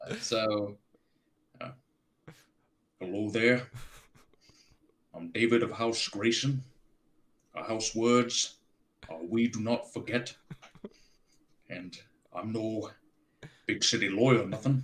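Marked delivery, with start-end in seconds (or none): 3.0-14.8 formal, stately medieval lord voice. Introducing oneself in a Game of Thrones manner: Davos voice. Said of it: "you really sound like Davos".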